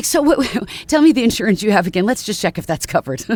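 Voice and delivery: talking through little giggles. Describing your foot and ankle doctor, imitate Doctor Harris's giggle-talking as he asks a patient something. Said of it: "he's like a giggle talker".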